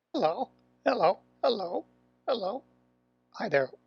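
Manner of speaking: high-pitched sock puppet character voice. Showing how to give your sock puppet a voice: sock puppet voice. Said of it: "give your puppet a voice".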